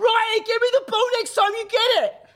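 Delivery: mock screaming, very high and loud. Speaker re-enacts screaming at a player during a game: retelling own scream. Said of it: "I'm screaming at him".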